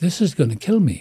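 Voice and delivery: ordinary talk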